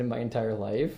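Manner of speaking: ordinary talk, nothing marked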